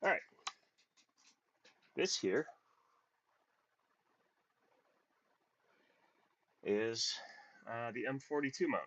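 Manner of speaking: out of breath. Speaker introducing the M42 mount right after saying so: out of breath. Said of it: "I am out of breath".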